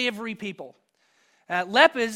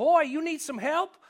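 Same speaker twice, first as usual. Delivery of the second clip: high-pitched put-on Texas Southern twang; 5 semitones higher than usual. Retelling a man by a river offering help, in a texas southern accent. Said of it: "in his best Texas Southern comfort accent".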